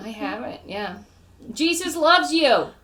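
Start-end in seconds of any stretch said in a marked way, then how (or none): 1.5-2.6 mock aggressive yelling, higher and louder. Acting out someone shouting at a comedy show: imitating an aggressive shout. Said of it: "Why am I so aggressive about it?".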